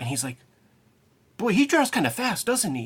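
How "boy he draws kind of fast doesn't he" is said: very high, swooping, worried, concerned tone. Retelling what the father said while watching the cartoon: imitating concern. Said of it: "Like, like, concern".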